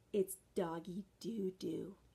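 hushed half-whisper, dropped low. A society lady confides to a visitor, lowering her voice to a half-whisper. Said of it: "She lowered her voice to a whisper".

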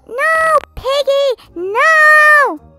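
very loud screaming, first "no" stretched. Goldie screams while playing the new piggy game. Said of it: "Why are you screaming?".

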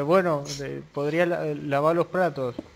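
ordinary talk, nothing marked

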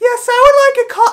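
shrill, very high, loud voice. Retelling how Abby orders at a drive-thru, imitating Abby's high drive-thru voice. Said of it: "will raise her voice up like 7 times in pitch".

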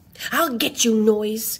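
ordinary delivery

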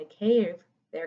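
ordinary delivery

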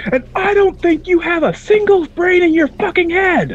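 shrill scream at the top of the lungs. Retelling walking into a shop with a couple of lads: retelling a scream. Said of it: "you hear me screaming at the top of my lungs".

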